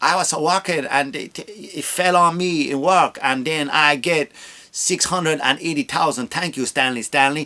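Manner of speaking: put-on Spanish-accented English throughout. Acting out a lawyer commercial testimonial: Spanish accent.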